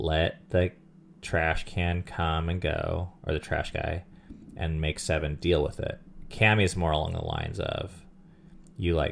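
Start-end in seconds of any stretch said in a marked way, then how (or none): none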